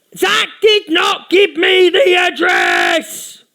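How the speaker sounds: very slow, high, drawn-out put-on shouting rant. Recalling Easy screaming at her audience, in an Easy impression, shouting. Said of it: "that was my impression of Easy".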